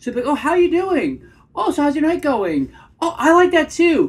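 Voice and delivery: voice an octave up, very high and loud. Demonstrating how someone sounds making small talk, in a voice an octave up. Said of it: "that octave up really kind of gives away".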